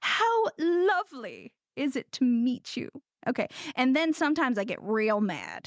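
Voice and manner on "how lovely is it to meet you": slow, affected, fancy put-on mid-Atlantic accent. Retelling how they greet people abroad: put-on mid-atlantic accent. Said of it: "I do affect quite a mid-Atlantic accent".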